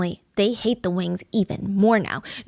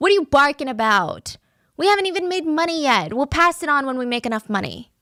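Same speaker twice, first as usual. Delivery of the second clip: put-on, pitched-up, needling, jeering taunt; 6 semitones higher than usual. Retelling neighbors yelling from a window: imitating people screaming taunts. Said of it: "They would scream out the window".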